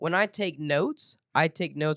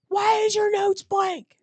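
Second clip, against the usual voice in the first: very high, screaming, scolding voice; 4 dB louder than usual. Recounting a teacher yelling at the speaker in front of the whole class: imitating a teacher yelling. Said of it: "He's yelling at me in front".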